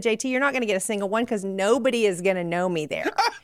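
ordinary talk

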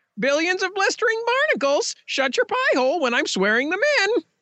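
very high, squawking parrot voice. Voicing a parrot during a courtroom swearing-in scene: parrot voice. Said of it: "Very nice parrot voice".

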